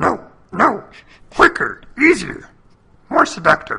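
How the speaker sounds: small, put-on alien voice. Acting out the swamp scene between Luke and Yoda, answering as Yoda: Yoda impression. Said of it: "that's a good Yoda".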